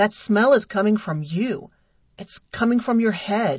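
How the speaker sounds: sounding full of suspicion, wary. A man asks the narrator to shake their head again; suspicious. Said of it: "he said suspiciously".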